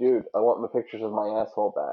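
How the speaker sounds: ordinary talk, nothing marked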